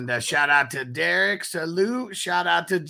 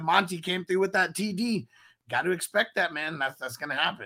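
ordinary delivery

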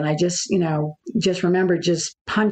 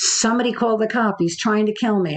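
half-voiced imitation of a top-of-lungs scream; 4 semitones higher than usual. Retelling fleeing barefoot and calling for help: imitating screaming at the top of lungs. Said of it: "scream as loud as I could at the top of my lungs".

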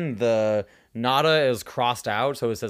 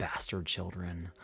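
mock mutter under breath, much lower, quieter; 6 semitones lower, 14 dB quieter than usual. Retelling her own remark during a lull in the noise, muttering under breath. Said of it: "under my breath, I went".

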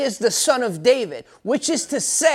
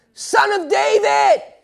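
crying out harder, louder, very high; 10 semitones higher, 3 dB louder than usual. Retelling how the man cries out even more: imitating a man crying out louder. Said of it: "he cries out even more".

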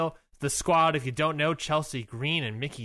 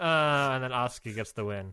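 usual speaking voice

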